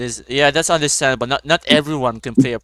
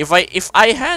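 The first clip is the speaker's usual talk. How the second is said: cracking voice, breaking mid-phrase, jumping high; 9 semitones higher, 3 dB louder than usual. Answering who they would date in the game, voice cracking. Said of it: "sorry, voice crack".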